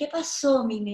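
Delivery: ordinary talk, nothing marked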